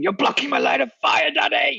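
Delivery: put-on shouting child voice. A dad retells his 11-year-old shouting at him during a game, imitating the kid shouting. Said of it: "an 11-year-old shouting".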